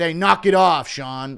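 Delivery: slow, deliberate referee-style call-out. Telling Sean Woodson to stop laying eggs, in a John McCarthy impression. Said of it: "Impression of John McCarthy".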